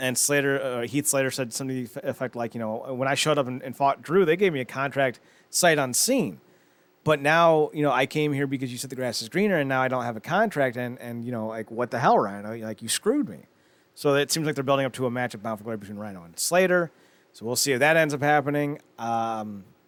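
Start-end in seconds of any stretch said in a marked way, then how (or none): none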